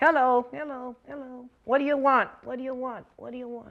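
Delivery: distant, far-off, echoing ventriloquist thrown voice. Showing ventriloquism with a puppet, distant echo voice. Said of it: "that's called the distant voice".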